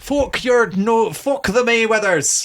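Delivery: high, loud, unsuccessful attempt at a Welsh accent. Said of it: "That's not Welsh".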